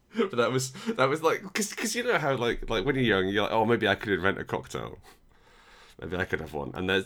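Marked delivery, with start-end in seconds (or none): none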